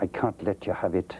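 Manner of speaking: imitated Scottish voice. Retelling a man turning down the speaker's request, in a scottish accent. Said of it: "Scottish uh".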